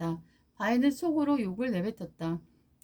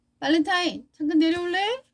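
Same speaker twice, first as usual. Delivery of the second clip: annoyed, irritated call, pitched up and loud; 6 semitones higher, 5 dB louder than usual. Narrator reads a mother calling Valentine down to the kitchen, annoyed voice. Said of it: "엄마의 짜증 섞인 목소리가".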